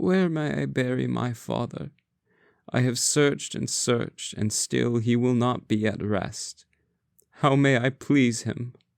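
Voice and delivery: tiny, small, high croaking voice. Reading a story aloud, voicing a daughter addressing the great masters, small croaking voice. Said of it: "croaked she in her small voice".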